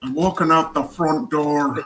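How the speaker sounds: put-on Irish accent. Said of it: "That's Daniel Day-Lewis with an Irish accent".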